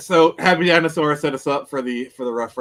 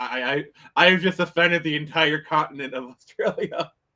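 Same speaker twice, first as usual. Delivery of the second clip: normal talking voice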